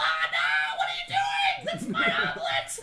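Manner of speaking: squeaky, swooping, very high, loud gnome shriek. Voicing a gnome whose egg was just stolen: gnome voice. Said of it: "and then you hear the gnome".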